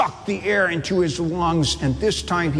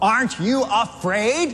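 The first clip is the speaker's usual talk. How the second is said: snarling, higher and slower; 5 semitones higher than usual. The wolf confronts a calm sheep as the other sheep watch: snarling. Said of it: "snarled the wolf".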